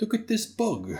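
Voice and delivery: put-on British nature narrator voice. Joking about British accents in fantasy movies: David Attenborough accent. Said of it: "the David Attenborough accent".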